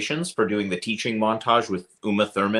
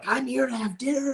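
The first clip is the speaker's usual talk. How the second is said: screaming, higher pitch; 4 dB quieter than usual. Retelling how he screamed at a waiter in a restaurant: imitating someone screaming. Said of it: "started screaming at him in the middle of the restaurant".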